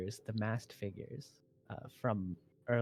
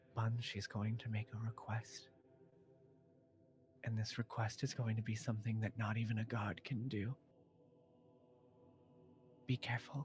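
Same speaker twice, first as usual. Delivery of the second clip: close, soft, secretive, leaning-in half-whisper; 7 dB quieter than usual. A character leans in close to Buns and speaks to her, half-whispering. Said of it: "he leans in close and he whispers".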